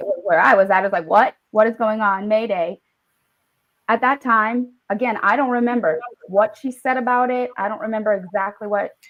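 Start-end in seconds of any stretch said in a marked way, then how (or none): 1.1-2.8 put-on startled, bewildered, panicked freak-out. Retelling own reaction when the period started: imitating own past panic. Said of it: "I'm freaking out in the bathroom".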